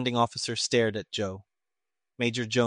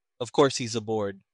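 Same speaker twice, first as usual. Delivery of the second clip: ordinary delivery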